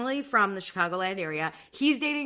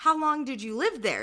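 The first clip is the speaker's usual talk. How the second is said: put-on Irish accent, pitched higher; 4 semitones higher than usual. Retelling Anna's chat with a Chicago girl, imitating Anna's Irish accent. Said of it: "in her Irish accent".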